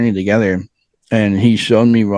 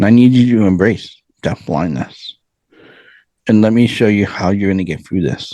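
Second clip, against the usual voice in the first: imitated still, soft, gentle voice. Man retells the inner voice that spoke to him, imitating a still, soft voice. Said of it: "that still soft voice in your heart".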